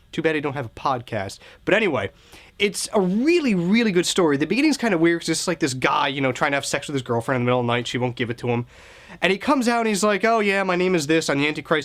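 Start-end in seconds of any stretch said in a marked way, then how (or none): 10.3-11.9 casual, nonchalant, offhand, no-big-deal delivery. Retelling how the story's Antichrist introduces himself: imitating a nonchalant tone. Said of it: "Very nonchalant".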